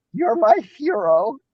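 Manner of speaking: put-on cracking teenage voice. Retelling what a young fan said to him, imitating The Simpsons teenager's voice crack. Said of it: "her voice cracks like the fucking the teenager".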